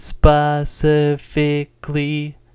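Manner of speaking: "specifically" with every syllable held on the first tone. Chinese tone game making everything first tone, every syllable of specifically level. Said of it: "Let's make it all first tone, which is the level tone. ... how it's all level and kind of unnatural".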